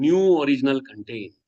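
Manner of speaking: stress on new and original. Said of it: "emphasizing the word new and original".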